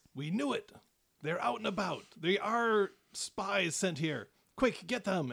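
shouting at the top of the voice. Narrating voices heard shouting in the hallway: shouting. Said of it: "And you hear them shouting".

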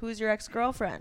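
ordinary talk

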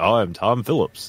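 mock radio announcer delivery. Describing Tom behind the curtains, imitating his Tom Phillips radio voice. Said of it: "he's got that voice".

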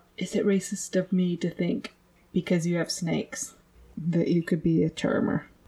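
whispered voice. Whispering a question privately to Anthe in character: whispering. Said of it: "I'm gonna whisper it to Anthe".

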